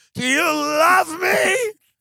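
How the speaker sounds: put-on sloppy drunken scream, very high pitched and dragged slowly. Acting out being drunk at his own wedding: pretend drunk screaming. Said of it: "just be drunk and just be, like, screaming at your wife going".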